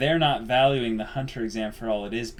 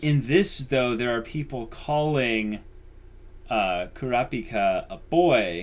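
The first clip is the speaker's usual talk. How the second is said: plain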